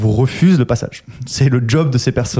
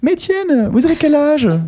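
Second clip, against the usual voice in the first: very high-pitched woman's voice. Retelling what a woman asked on the phone, imitating the woman's voice. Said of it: "Elle avait vraiment cette voix".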